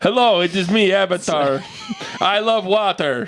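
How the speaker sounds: clumsy, bad, fake put-on Russian accent. After asking whether it's offensive, the speaker goes ahead in a bad Russian accent. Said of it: "My Russian accent's not that good".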